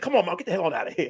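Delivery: rude, dismissive, disrespectful tone. Retelling a daughter's reply to her mother in a movie scene. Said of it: "She's like".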